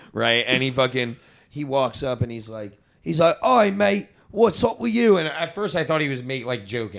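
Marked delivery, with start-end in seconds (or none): 3.4-5.1 put-on English accent, higher and louder. Retelling what a kid from england said on walking up: imitating an english accent. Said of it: "I didn't realize it was an accent".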